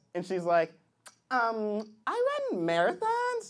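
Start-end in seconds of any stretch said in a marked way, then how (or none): 1.3-3.5 put-on girl voice with swooping, sing-song intonation.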